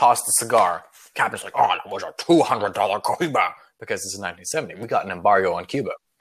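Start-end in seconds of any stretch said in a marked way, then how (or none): 1.5-3.5 put-on Scottish accent. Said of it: "Sean Connery voice".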